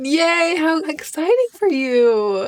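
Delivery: condescending, slow, high, with "you" long and drawn out. Reacting to a makeup trend long past on the mainland: condescending tone. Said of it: "It's the most condescending tone I've ever used".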